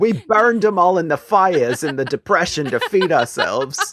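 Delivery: very high, slow, drawn-out, exaggerated New York accent. Joking about a self-described New Yorker, imitating Demi. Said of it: "Demi's like".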